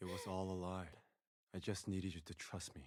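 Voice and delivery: low, hushed drone. Recapping a film scene, speaker delivers a character's confession: mimicking Jinu's bored monotone. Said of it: "I don't give a fuck about you monotone voice".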